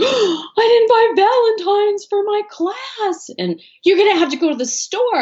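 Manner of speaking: panicked outburst. Retelling a son's reaction to forgetting class Valentines: imitating Alex panicking. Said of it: "he all of a sudden got in this panic".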